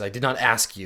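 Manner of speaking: scowling, hostile, glowering tone. Voicing a character who scowls at a stranger who answered: scowling, hostile. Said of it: "scowls at you".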